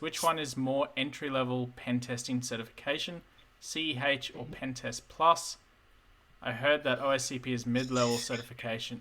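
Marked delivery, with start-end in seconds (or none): none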